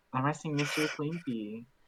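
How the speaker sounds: posh, prim, very polite way of speaking. Asking a character a question in the game: talking like a fancy person. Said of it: "Are you talking like a fancy person".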